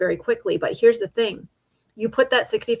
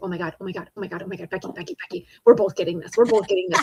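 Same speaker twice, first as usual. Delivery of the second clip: mock giddy, fast, swooping excited babble with repeats. Retelling Chad poking their arm at the announcement: imitating Chad's excitement. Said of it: "He's so excited".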